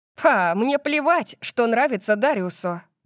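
dismissive, disdainful tone. Warned that someone won't approve, the narrator answers dismissively. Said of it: "сказала я пренебрежительно".

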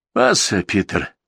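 timid, shy, meek voice. A man timidly breaks the silence, addressing the one he calls master: timid. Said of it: "робко прервал молчание Мангвайло".

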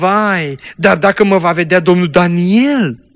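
fearful, worried voice. A narrator reads a character's anxious question in a story: fearful. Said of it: "a întrebat plină de teamă Jessica".

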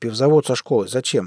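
plain reading voice

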